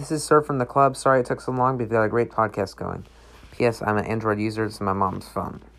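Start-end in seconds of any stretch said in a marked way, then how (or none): none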